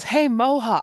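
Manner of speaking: high-pitched yell, calling out as if over distance. Retelling how a friend called to someone across Times Square traffic: imitating a friend yelling. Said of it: "she just yells".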